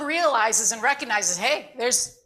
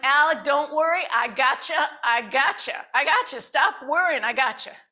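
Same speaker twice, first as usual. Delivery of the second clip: put-on North Carolina Southern accent; 3 semitones higher than usual. Retelling what Miss Val told Alec in the classroom, North Carolina accent. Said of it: "I'm going to use my North Carolina accent".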